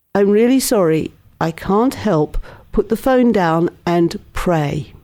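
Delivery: ordinary talk, nothing marked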